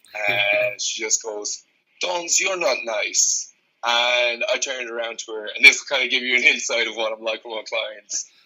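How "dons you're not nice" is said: awful put-on Brazilian accent, pitched up. Retelling what a client from Brazil said in a session, awful Brazilian accent. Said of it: "so I'm going to do an awful accent".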